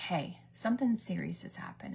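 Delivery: ordinary delivery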